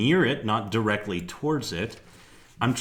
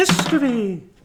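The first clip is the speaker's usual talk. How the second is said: shrill, very high, loud character voice; 14 semitones higher, 6 dB louder than usual. Answering a question with the word history in a Halthus voice. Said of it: "I don't know why I said that in a Halthus voice".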